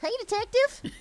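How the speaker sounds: doofy, dopey put-on character voice. A player voices a character greeting the detective, in a doofy voice. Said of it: "This guy got a doofy voice".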